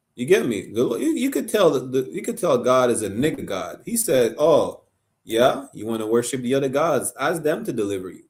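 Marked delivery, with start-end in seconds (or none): 4.4-8.2 pure sarcasm, tongue in cheek. Acting out god's reply to worshippers of other gods: imitating a sarcastic retort. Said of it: "That's sarcasm right here".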